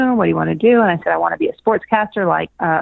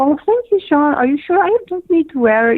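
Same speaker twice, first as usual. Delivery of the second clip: put-on Swedish accent, pitched high; 9 semitones higher than usual. Retelling what a contestant from Sweden said: imitating a Swedish accent. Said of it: "in this beautiful Swedish accent".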